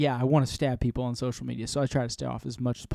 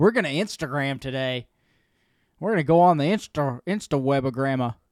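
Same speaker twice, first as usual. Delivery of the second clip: put-on elderly old man voice. Teasing how the other speaker said it, old man voice. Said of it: "sound like it was being said by such an old man".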